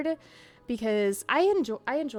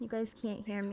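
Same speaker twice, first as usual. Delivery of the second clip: pretend side whispering, quieter; 11 dB quieter than usual. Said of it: "I'm whispering".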